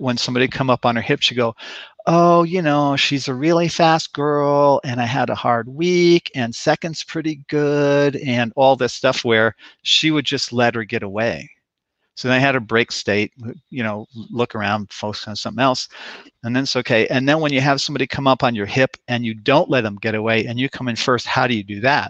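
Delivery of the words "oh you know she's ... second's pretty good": high-pitched, lilting, sing-songy voice. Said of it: "this kind of sing-songy voice".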